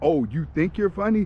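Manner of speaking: ordinary talk, nothing marked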